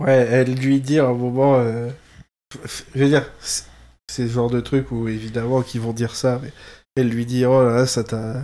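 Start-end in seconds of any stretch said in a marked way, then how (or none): 7.5-8.4 put-on German accent. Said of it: "Pourquoi j'ai fait un accent allemand?".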